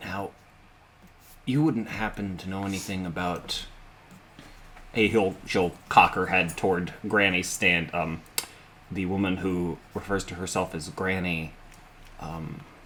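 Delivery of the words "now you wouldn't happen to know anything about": secretive, hushed, conspiratorial half-whisper. Voicing a character in a game scene, conspiratorial half-whisper. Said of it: "lower her voice to a whisper".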